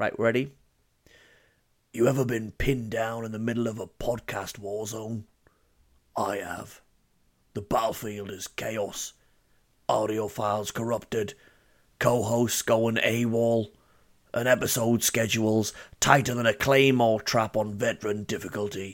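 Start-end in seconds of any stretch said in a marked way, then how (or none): 1.9-18.9 dramatic, gravelly, raspy Cockney voice. Podcaster launches into a bit as Price, in a dramatic gravelly Cockney voice. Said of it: "a direction of dramatic gravelly voice".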